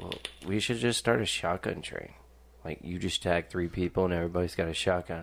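ordinary talk, nothing marked

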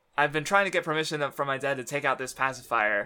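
ordinary talk, nothing marked

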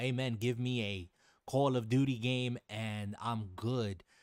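normal talking voice

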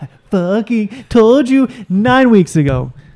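annoyed and drawn out. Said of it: "I'm like".

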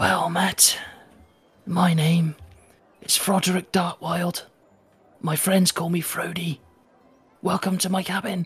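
rasping, raspy voice of a dead man. Narrator voicing Froderick Dartwild, a corpse, greeting Matt in a raspy voice. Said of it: "in a raspy voice".

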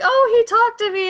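very high, very loud, shrill squealing cry. Retelling how an anime heroine acts toward him: imitating a loud character. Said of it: "But she's very loud".

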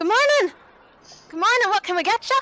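put-on very high, small, young halfling voice. Voicing the younger halfling who greets customers entering a bakery: young halfling voice. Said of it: "the younger halfling goes".

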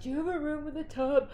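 put-on high-pitched moan. Retelling being rushed in a wheelchair and asking for a room, moaning request. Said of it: "and I'm moaning while I'm moaning".

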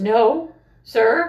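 panicked voice cracking and jumping high in pitch. Retelling how a panicking kid lied to a recruiter: imitating a voice cracking. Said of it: "And his voice cracks".

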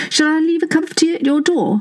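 loud calling out. Narrating a story, a woman asks a man in another room loudly. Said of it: "asked Mandy loudly".

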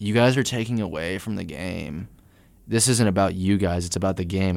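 plain

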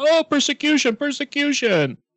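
very high, shrill screaming. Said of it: "the bully starts screaming".

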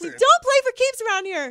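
very high, loud character voice. Joking about the playoffs in the coach's voice: D'Antoni voice. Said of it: "that's my D'Antoni voice".

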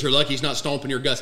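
ordinary talk, nothing marked

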